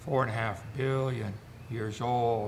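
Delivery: mock-solemn, sanctimonious, pious, sermon-like intonation. Saying a line that always needs it, holy sanctimonious tone. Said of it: "You got to get the holy sanctimonious tone in your voice anytime you say that".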